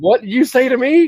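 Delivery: mock angry voice, high, wide pitch range.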